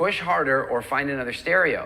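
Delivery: ordinary delivery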